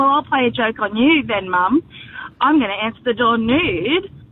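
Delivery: ordinary talk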